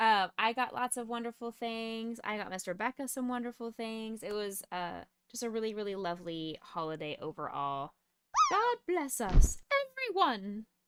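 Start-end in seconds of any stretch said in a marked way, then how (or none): 8.5-10.6 shrill, very loud, very high swooping sing-song cry. After wishing everyone a merry Christmas, a blessing: sounding like Ron Weasley. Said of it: "Why do I sound like Ron Weasley".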